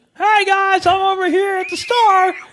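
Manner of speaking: put-on very high, slow, drawn-out loud call. Imitating a friend who announces everything loudly: imitating a friend's loud voice. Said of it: "They could probably just hear you. You're like".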